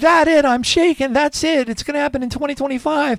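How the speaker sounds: high, loud, totally freaked-out panic.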